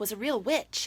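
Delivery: ordinary delivery, nothing marked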